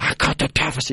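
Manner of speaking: creepy, hushed, breathy whisper. Mocking Biden's deficit bragging to Rhino, in creepy Biden whisper. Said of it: "that creepy whisper deal".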